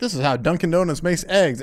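usual speaking voice

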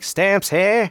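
put-on very high, old-timey Northeastern accent. Selling postage stamps at Costco, the speaker calls out in an early 1900s Northeastern accent. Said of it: "that early 1900s Northeastern accent".

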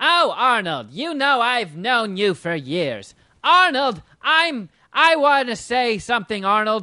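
high, loud, overly chummy buddy-buddy schmoozing tone. Retelling someone getting buddy-buddy with Arnold: Jon Lovitz impression. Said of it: "that's a great Jon Lovitz impression".

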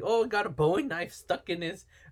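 fumbled, bad Irish accent, pitched high. Retelling a film scene to a co-host, doing a bad Seamus Irish impression. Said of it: "I can't do an Irish voice".

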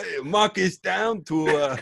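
very slow, thick put-on Italian accent. Recounting how he talks for the rest of it, in a really italian voice. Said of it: "really Italian voice".

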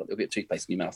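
very quiet. Showing how to point out a mistake once everyone's gone: said very quietly. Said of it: "you say it very quietly".

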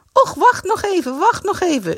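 whiny complaining, sing-song, swooping up and down. As the others are ready to go, Greet complains again, whining. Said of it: "zeurde Greet weer".

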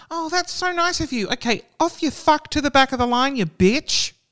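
mock very high-pitched voice dripping with sarcasm. Acting out a wished retort to someone who let others push in: put-on sarcastic tone. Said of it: "I'm the queen of sarcasm".

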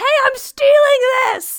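very loud, shrill, high shout. Playing a character drawing a monster away from friends, shouting. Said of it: "and shout".

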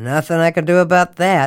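loud, smug, self-satisfied, unbothered brush-off. The guard answers the narrator's question about him, smug. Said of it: "he said smugly".

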